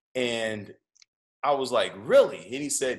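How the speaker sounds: normal talking voice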